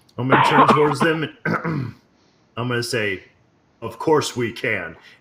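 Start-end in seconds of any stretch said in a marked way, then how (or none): 3.8-4.9 grave, very stern, severe, commanding. A player, speaking as his character, turns to the young champions: very stern voice. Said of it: "In a very stern voice".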